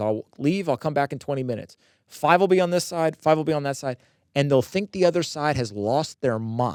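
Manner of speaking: plain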